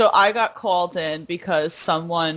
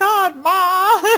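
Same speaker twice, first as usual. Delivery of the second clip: very high-pitched, put-on Southern belle accent; 13 semitones higher, 5 dB louder than usual. Recalling your cranky teen self talking to your mom, southern belle accent. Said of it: "almost do like this uh Southern Belle accent".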